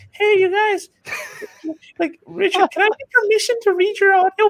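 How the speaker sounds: small, meek, tiny voice, very high-pitched. Recalling his first message asking permission to read someone's audiobook, in a little voice. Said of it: "back in my little voice".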